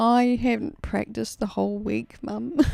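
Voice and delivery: put-on tearful crying voice. Retelling telling mum about not practicing: imitating own past crying. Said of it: "and I'm, like, crying".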